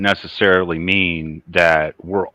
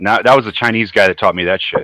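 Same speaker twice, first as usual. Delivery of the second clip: plain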